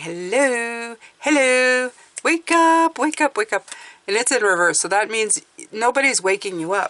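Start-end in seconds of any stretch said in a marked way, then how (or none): 0.0-3.7 put-on little fairy voice, high and slow. Reading a tarot card, voicing the card's little fairy: voicing a little fairy. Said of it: "her little fairy going".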